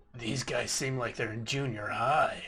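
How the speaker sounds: soft, barely audible, very hushed half-whisper. Half-whispering an aside to a fellow player: half-whispering in character. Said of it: "I'm gonna whisper to Tim".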